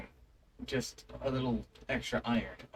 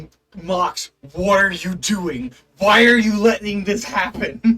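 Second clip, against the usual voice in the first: very loud, high screaming voice; 6 semitones higher, 14 dB louder than usual. Retelling a brother's reaction during the game: imitating someone screaming. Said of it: "was screaming at me".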